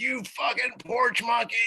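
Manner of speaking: mock, shrill, very high screaming. Retelling a woman screaming an insult at the group, retelling a scream. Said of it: "she screamed at us like right to our faces".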